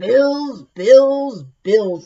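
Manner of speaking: growled out big and loud. Reading a picture book aloud, the wolf checks his mailbox: growling B.B. Wolf voice. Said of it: "he growled".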